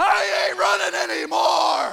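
very loud, very high, raw full-lung yell. Recounting turning back toward the darkness, retelling a full-lung yell. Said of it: "I just yelled at the top of my lungs".

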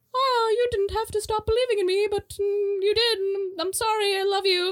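put-on Victorian English accent. Retelling a scene where the imaginary friend Zoe speaks, Victorian lady English accent. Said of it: "she's like this Victorian lady with an English accent".

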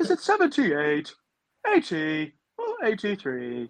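put-on ring announcer voice. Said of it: "Howard Finkel".

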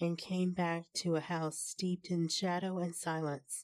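plain reading voice

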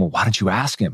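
put-on whisper. Retelling what a dad said to his son: imitating a whisper. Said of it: "his dad whispers to him".

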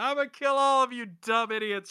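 high, play-acted, taunting yell. Retelling how a villain yells up from the canyon: imitating Wheel of Fortune yelling. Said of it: "he's just yelling up there".

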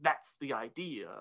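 soft, hushed, creepy voice. Recapping an episode, quoting Phineas's reply to Candace in his very creepy voice. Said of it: "Phineas gets this very creepy voice".

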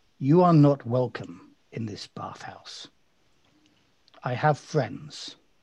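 very cold, frosty, icy, unwelcoming delivery. Voicing an attacker who warns a player off: very cold voice. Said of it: "she says very coldly".

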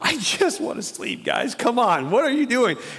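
put-on just-woken exasperation. Imagining Jesus woken by shouting disciples: imitating Jesus woken from sleep. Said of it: "I can just see Jesus doing that".

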